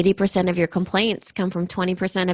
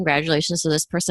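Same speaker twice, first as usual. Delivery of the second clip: plain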